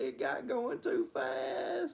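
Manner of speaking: put-on very high, slow, swooping, tearful whine. Retelling what he said crying after the go-kart went too fast: imitating someone crying. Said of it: "he started crying. He was like".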